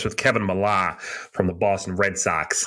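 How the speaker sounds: weak, not-very-good put-on Boston accent. Announcing an episode's interview guest: not very good boston accent. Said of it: "That's my attempt at a Boston accent".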